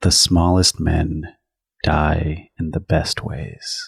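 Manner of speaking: threatening, menacing half-whisper, very close to the ear. Player character holding a plasma claw to a man's neck, half-whispered into his ear. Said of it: "and whisper into his ear".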